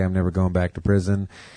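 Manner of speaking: ordinary talk, nothing marked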